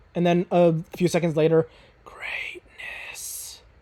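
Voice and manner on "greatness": very quiet, faint, ethereal, many-voiced whisper. Describing a voice that calls out, in a whispered ethereal voice. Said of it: "the voice says like in a whispered, like multiple, like almost ethereal voice".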